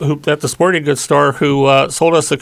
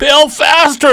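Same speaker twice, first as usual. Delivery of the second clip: mock shouting, very high pitched; 12 semitones higher, 4 dB louder than usual. Retelling paddling as hard as they could while a companion bailed; retelling a yell. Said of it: "and I'm yelling".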